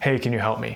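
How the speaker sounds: toneless, flat, level monotone. Showing a poor way to ask for help: flat monotone delivery. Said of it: "listen to my tone here, ... It's very monotone and flat".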